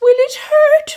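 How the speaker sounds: very high little whimpering voice. Reading a story, frightened Figgy Two Socks asks Jefferson Bear a question, whimpering. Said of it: "Whimpered little Figgy".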